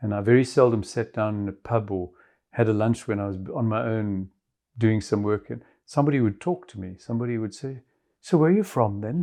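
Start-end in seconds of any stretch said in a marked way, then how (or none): 8.2-9.2 put-on Irish accent, badly done, pitched up. Retelling what a stranger in a pub would ask, in a bad irish accent. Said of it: "Excuse the bad Irish accent".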